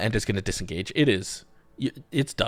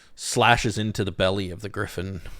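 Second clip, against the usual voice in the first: ordinary delivery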